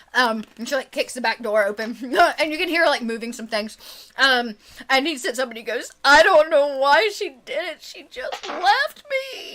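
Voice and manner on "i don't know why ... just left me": put-on slow, high, drawn-out, hard-to-follow blubbering. Retelling a man who sits up crying after she left; imitating him blubbering. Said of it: "he's blubbering, so it's also hard to understand him".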